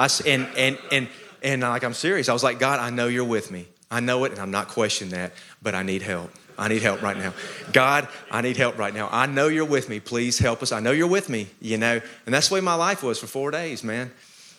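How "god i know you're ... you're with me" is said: desperate, panicked pleading voice. Retelling praying mile by mile while driving: retelling a desperate prayer. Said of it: "I was praying for my life mile by mile".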